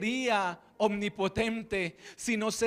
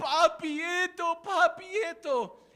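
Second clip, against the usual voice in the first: put-on tearful toddler voice, high, drawn-out, through sobs; 8 semitones higher than usual. A father retells his son crying for something, imitating a crying child. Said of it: "Y empieza a llorar y dice".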